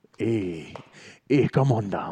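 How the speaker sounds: slow Jamaican accent, movie witch doctor voice. Showing how the speaker started talking once, Live and Let Die voodoo doctor. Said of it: "That's Jamaican".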